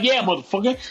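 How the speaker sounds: put-on aggressive tone with attitude. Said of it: "I got an attitude".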